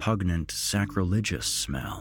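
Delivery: plain reading voice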